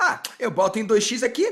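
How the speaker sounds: loud, high, careless, dismissive flippant voice.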